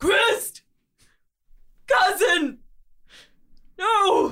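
very high, shrill, very loud anguished shout. Playing a character who sees his cousin trapped in crystal: shouting. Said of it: "he shouts".

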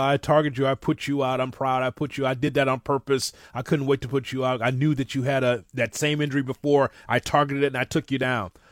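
ordinary delivery

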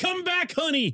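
put-on high terrible Southern accent. Acting out a man calling after a woman in his dream, terrible Southern accent. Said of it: "he has a terrible Southern accent".

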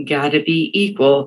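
play-acted scornful, contemptuous tone dripping with disdain. Retelling a parent's remark on the phone: imitating a dripping disdainful tone. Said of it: "that dripping disdain in his voice".

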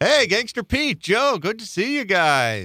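very high radio announcer voice, guys drawn out. Greeting the other hosts after being handed the segment, in a radio voice. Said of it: "Why are you talking in a radio voice?".

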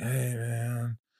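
put-on soft stoner-guy voice. An actor describing auditions, showing how he reads for a stoner guy. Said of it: "they want a stoner guy. It's like".

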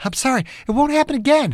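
fearful pleading whisper. Reading a story aloud, a captive apologizing: fearful pleading whisper. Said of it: "his hushed whisper filled with fear and pleading".

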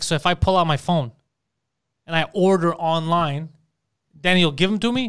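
ordinary delivery

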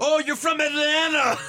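high, loud, laughing, sneering mockery.

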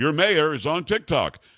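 plain

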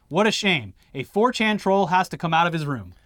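ordinary talk, nothing marked

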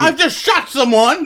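put-on villain yelling. Retelling yelling random things at a bar like a movie villain: imitating a movie villain yelling. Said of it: "I could just yell random shit".

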